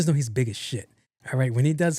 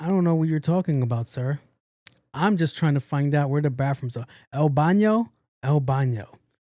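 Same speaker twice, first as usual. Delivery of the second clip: feigned speech of someone lacking English. Retelling pretending not to speak english to a man: playing a non-english-speaking immigrant. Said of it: "play the immigrant card and be like".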